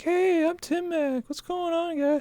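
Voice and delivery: put-on anime girl voice, very high, slow. Imagining the other speaker with an anime girl avatar: put-on anime girl voice. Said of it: "You wanna do the voice?".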